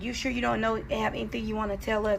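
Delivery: ordinary delivery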